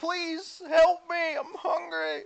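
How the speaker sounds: screamed cry. Narrating to players, voicing an unseen person heard nearby: screaming. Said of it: "what is this infernal screaming?".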